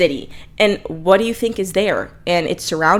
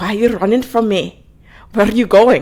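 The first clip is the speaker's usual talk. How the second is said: over-the-top, bad, exaggerated fake Irish accent; 2 semitones higher than usual. Retelling what a man said to a woman, the speaker uses an irish accent. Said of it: "And it's an Irish accent".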